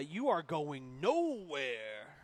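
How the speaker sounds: terrible, horrible, swooping, drawn-out pro-wrestler voice. Voicing a player who burst through the line: horrible Macho Man Randy Savage impression. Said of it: "horrible, Randy, or Macho Man Randy Savage impression".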